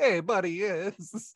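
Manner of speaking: put-on stock Boston guy accent. Retelling a movie scene, imitating Ben Affleck as a stereotypical Boston guy. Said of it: "the stereotypical Boston guy".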